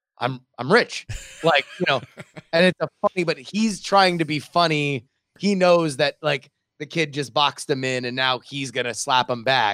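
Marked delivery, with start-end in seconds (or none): 0.2-1.1 put-on matter-of-fact voice. Retelling a movie scene where a kid questions him, put-on matter-of-fact. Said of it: "in like a matter of fact kind of way".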